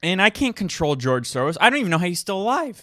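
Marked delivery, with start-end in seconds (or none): 1.6-2.8 high, breaking, cracking voice. Wondering aloud about someone on a podcast: voice cracking. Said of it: "My voice just cracked".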